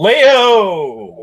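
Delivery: loud shout, word stretched long. Greeting another speaker by name: loud call. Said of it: "That was really loud".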